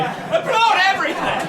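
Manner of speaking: squealing, very high-pitched American crowd cheer. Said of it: "kind of American audience vibe".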